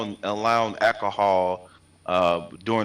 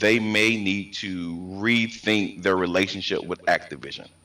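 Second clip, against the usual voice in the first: deliberately slowed-down, slow, careful delivery; 2 semitones lower than usual. Repeating what the Xbox guy said, this time speaking slower. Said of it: "Let me say it again, but slower".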